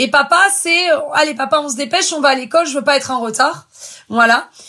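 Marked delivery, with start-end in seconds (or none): none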